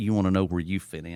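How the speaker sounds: normal talking voice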